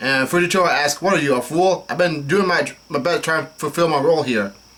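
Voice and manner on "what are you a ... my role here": usual speaking voice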